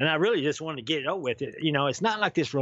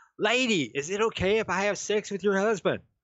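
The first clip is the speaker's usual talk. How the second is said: put-on loud, bold calling out across a room; 5 semitones higher than usual. Retelling what she yelled from on top of the bed: imitating someone yelling loudly. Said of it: "she yells at her from on top of the bed".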